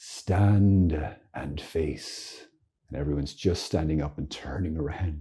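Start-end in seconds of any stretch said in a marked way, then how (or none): 0.0-2.4 put-on fine, clear English accent. Retelling a dark church service, the speaker quotes a priest addressing everyone; English accent. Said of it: "in his beautiful English accent says".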